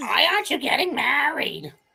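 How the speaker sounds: put-on high, creaky, rough-edged character voice. Reacting to a game, voicing the player's in-game mother: mother character voice. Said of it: "your mom to sound like that".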